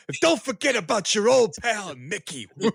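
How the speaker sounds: big yell, capped with a woo. Continuing an impression after admitting where it was heading, as a borderline Ric Flair impression. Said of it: "borderline Ric Flair with that impression".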